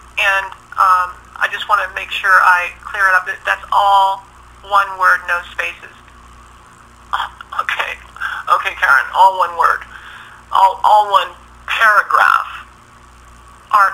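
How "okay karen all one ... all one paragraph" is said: heavy, gratuitous sarcasm. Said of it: "I could hear the gratuitous sarcasm there".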